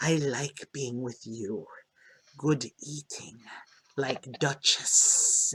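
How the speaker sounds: very soft, low, wet bubbling underwater murmur. A voice rises from under the water to you; bubbling underwater voice. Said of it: "this bubbling voice come to you".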